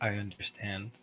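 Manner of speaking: gentle, soft-spoken. Player describes their character walking up to another character: very soft voice. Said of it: "in a very very soft voice".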